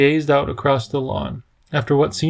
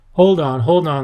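plain reading voice

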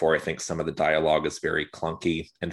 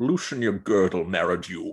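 put-on rough Scottish-accented voice; 2 semitones higher than usual. Retelling a line said to a guy, the speaker does a Sean Connery impression. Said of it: "full Sean Connery gruff Scotsman mode".

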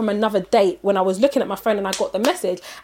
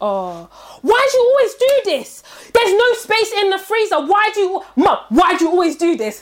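mock, very high-pitched, shrill shouting; 10 semitones higher, 4 dB louder than usual. Retelling a date complaining to his mum about the freezer: imitating him shouting at his mum. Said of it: "he's shouting at his mum".

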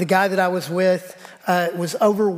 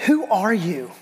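mock crying voice, much slower. Recounting a lunch, the speaker quotes a waitress at the table, imitating a crying waitress. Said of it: "and she's crying".

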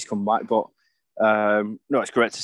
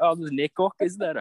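bad put-on Scottish accent, pitched up; 7 semitones higher than usual. Retelling a press conference remark about missing bottles: bad Scottish accent. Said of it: "apologies for my crap Scottish accent there".

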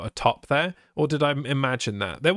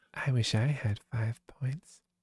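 creepy delivery, quieter; 6 dB quieter than usual. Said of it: "Why did you say that really creepily?".

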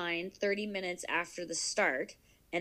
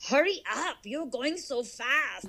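put-on, slow, high, coaxing German accent; 6 semitones higher than usual. Imitating the running app's voice urging the runner on, in a German accent. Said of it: "Is it a German accent?".

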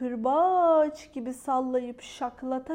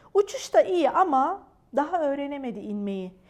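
plain reading voice

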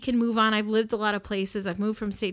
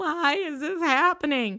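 mock sobbing, much slower; 6 semitones higher than usual. Speaker retells the mother sitting in the corner during the fight, imitating a mother sobbing. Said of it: "just sobbing like".

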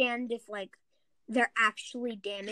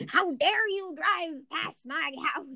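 put-on grumpy, cranky old man voice; 4 semitones higher than usual. Describing how someone sounded when they got upset, old man voice. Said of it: "it sounded like an old man just like".

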